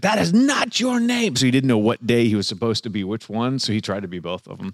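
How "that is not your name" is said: shrill, very high, drawn-out drill-sergeant scream. Describing how drill instructors treated a recruit: retelling a screaming drill instructor. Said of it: "they would start screaming at him like".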